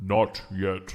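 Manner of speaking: guttural stone-creature voice. Voicing a creature that taps its spear and answers: guttural stony voice. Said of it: "a guttural sort of stony mouth make noises that say".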